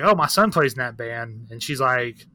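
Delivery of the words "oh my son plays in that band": plain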